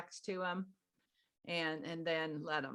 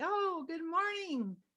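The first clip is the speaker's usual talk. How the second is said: high, slow, sweetest voice. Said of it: "say it in your sweetest voice".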